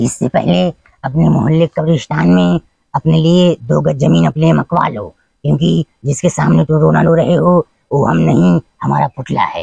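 low, creaky voice, not gravelly.

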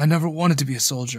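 ordinary delivery

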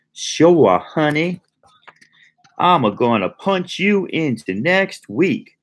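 mock Southern drawl, exaggerated, very high and swooping. Commenting on a cartoon, the speaker quotes Rogue in Rogue's ridiculous accent. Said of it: "Rogue has this ridiculous accent".

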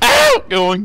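imitated voice crack on a shout. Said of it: "it sounded like Spectre's voice cracked".

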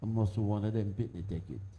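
very quiet, low, barely audible mutter. Retelling a remark muttered under the breath: imitating a mutter under the breath. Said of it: "I barely muttered under my voice".

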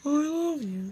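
high, silly, put-on hand-puppet voice. Speaker in a puppet costume, off to disrupt a date, uses a puppet voice. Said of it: "is this a good impression?".

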